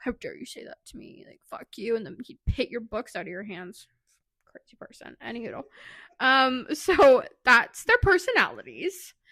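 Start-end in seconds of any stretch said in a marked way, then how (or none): 0.0-1.9 mock breathy whisper, sulky, pouty, indignant outburst. Imagining the grumpy football player's reaction to teasing: imitating a pouty angry outburst. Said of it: "he'd probably flip his shit and get all pouty and be like".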